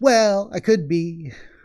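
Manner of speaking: put-on, cutesy, sugary cute voice. Voicing a girl's reply after being asked if she's reading too much into it, cutesy. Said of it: "she gets cutesy and says".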